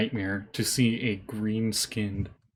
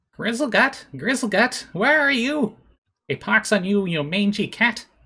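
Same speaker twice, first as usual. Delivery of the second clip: put-on very high, raspy, scratchy old woman voice calling out; 12 semitones higher, 6 dB louder than usual. Narrating the players' night watch, the speaker voices a woman calling out in a scratchy old woman voice. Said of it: "a woman's scratchy voice calling out a name".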